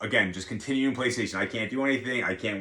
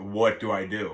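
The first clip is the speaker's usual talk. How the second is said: put-on panicked crying, sobbing; 2 semitones lower than usual. Retelling calling a nurse friend after an injury, acting out own panicked crying. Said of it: "like I was like crying, panicking".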